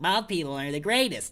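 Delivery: put-on cartoon character voice. Joking about being a baby, then doing an impression: SpongeBob voice. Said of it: "That's that's my impression of SpongeBob".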